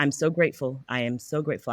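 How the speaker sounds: choked-up, tearful voice on the verge of crying. Telling another speaker how grateful they are: tearing up. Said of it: "I'm tearing up".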